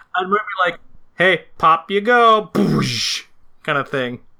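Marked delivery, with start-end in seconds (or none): 1.1-2.5 very slow, high, drawn-out, heavily sarcastic. Pitching a character's lines to the group: sarcastic character voice. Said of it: "super sarcastic about the whole thing".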